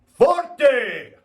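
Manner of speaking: "forte" shouted high and loud. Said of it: "So I want you to go".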